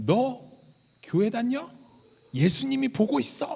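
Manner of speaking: put-on halting, clumsy Korean spoken with an American accent. A junior pastor retells what a stranger asked him, in a halting Korean-American accent. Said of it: "그 어눌한 그 이 세 말투로".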